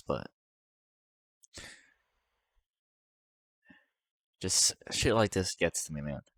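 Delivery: crying while talking. Admitting that scenes like this get to them, crying while talking. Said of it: "it's freaking embarrassing crying like this".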